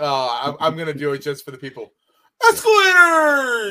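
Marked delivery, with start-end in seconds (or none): 2.5-3.7 shrill, very loud, high cartoon shout. Doing an impersonation just for the people watching: Patrick Star impression. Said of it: "I so badly wanna do my impersonation".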